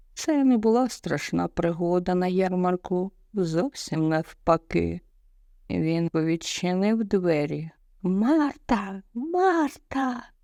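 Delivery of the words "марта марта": high, loud shout projected far. Louis opens the door and calls to Marta leaving her room, shouting. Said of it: "крикнув він".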